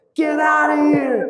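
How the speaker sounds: mock enraged, very high, shrill, drawn-out yell. Retelling snapping at an auto driver who came up to him, retelling his furious yell. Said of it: "I'm so furious at this point".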